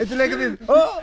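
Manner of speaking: loud, high-pitched whooping laughter.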